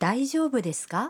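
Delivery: polite, concerned tone.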